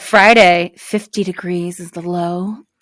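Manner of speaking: slow, sultry delivery. Reading the weather forecast aloud, now saying it slower and sexier. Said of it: "I can say it slower and sexier".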